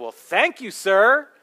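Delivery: dry, sarcastic, mock-polite tone. Retelling tipping a hat to a man who then walked away: retelling a sarcastic thank-you. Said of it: "sarcastically said".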